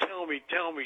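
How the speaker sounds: ordinary delivery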